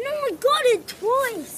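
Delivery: loud, slow, angry, insistent delivery.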